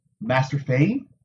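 hesitant, unsure, tentative calling out. A man addresses someone his people thought had been taken, hesitant. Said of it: "Rand said hesitantly".

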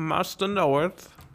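British butler voice. Voicing a chimp trained as the butler, addressing Batman: Alfred butler voice. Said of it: "he's a British Alfred Butler man".

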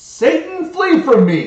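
shrill, high, piercing, very loud yell. Retelling a stormy night, the speaker quotes their then wife in bed: retelling a yell. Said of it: "sits up straight in bed and yells".

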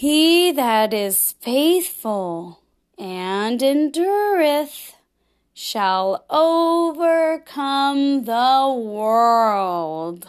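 very slow, deliberate, drawn-out reading. Model sentence for the listener to repeat after, spoken very slowly. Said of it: "I'm going to say it slowly".

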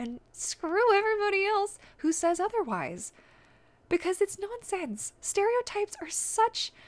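voice rising, thin and squeaky. Talking to the listeners of an episode: voice getting high and squeaky. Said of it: "my voice is getting so high and squeaky".

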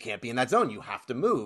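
ordinary delivery

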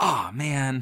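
high, put-on innocent, deflated dismay. Describing a movie character failing a chase, imitating innocent dismay. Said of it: "she has this very innocent".

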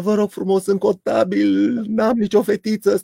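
acted, high crying voice, tearful as if weeping. Telling a story, act out a plea to the police while imitating someone crying. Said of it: "Ăsta începe să plângă".

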